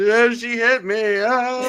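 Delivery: put-on little boy crying, very high and slow. Retelling how little boys ran up to complain: imitating crying little boys. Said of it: "all the little boys would run up crying".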